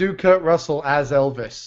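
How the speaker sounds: ordinary talk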